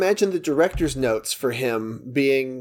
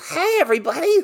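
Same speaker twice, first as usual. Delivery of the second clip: grating, shrill, very high, obnoxious TV-host voice. Contrasting the character's private voice, imitating Gyllenhaal's character, obnoxious shrill voice. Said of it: "the obnoxious, shrill".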